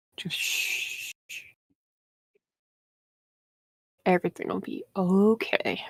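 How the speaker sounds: soft, condescending, patronizing shush. Character quieting a panicking fellow captive, with condescending shushing. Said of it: "I will make somewhat condescending shushing noises".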